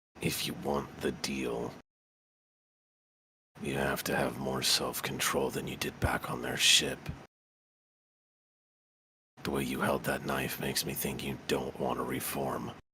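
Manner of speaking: low, soft voice. Leaning into Gabriel's ear so diners can't overhear, in a lowered voice. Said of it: "Then I will lower my voice".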